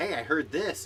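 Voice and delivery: ordinary talk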